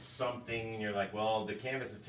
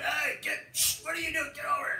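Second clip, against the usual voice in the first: play-acted very high, shrill yell; 4 dB louder than usual. Retelling the night the cat seemed to fight the dogs, retelling a yell at the dogs. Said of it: "I'm yelling at the dogs".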